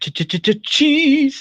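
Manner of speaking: very high-pitched stutter leading up to cheese. Recalling a favourite cartoon character's catchphrase: Monterey Jack impression. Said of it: "especially when he goes".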